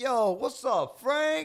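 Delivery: put-on very high, very loud, drawn-out New York accent. Retelling an actor's scene: imitating a New York accent. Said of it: "a New York accent".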